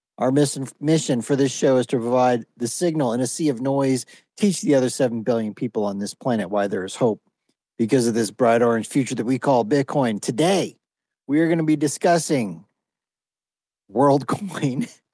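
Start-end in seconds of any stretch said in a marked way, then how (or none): 11.3-14.9 breaking into laughter mid-word. Announcing the day's first topic to the show: laughing while talking. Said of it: "I can't even say that without laughing".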